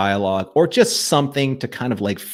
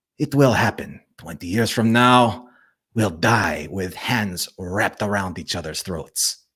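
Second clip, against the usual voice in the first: put-on accent leaning Italian throughout; 2 semitones lower, 4 dB quieter than usual. Trying out a quote in a character's voice, Londo Mollari voice. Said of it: "I'm going to try a Londo thing here".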